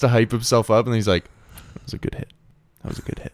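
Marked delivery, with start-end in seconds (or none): 1.7-3.3 put-on grudging reluctance, quieter. Retelling a man hyping himself up to say it; mock-reluctant forced praise. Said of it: "it's so hard for him to say it".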